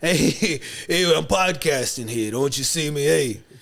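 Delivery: put-on New York street voice with New York vowels. Speaker joins the accent joking on the podcast, in a New York accent. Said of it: "that's New, New York".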